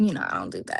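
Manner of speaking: creaky, heavy vocal fry throughout. Answering another speaker about the fourth of July: extra vocal fry. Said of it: "you got an extra vocal fry right there".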